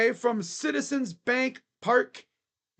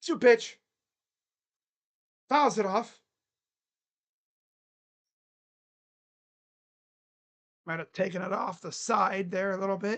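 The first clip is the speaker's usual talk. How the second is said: rough, raspy, hoarse voice; 3 semitones lower than usual. Calling a pitch during a baseball broadcast, raspy voice. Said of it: "I don't know why my voice is so raspy".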